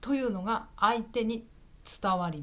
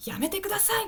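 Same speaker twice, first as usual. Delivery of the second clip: quick, strong, forceful, very high-pitched; 10 semitones higher than usual. Contrasting with the gentle way of saying it: quick forceful delivery. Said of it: "優しい言い方じゃなくて…ちょっと早い言葉で強い言い方で言う".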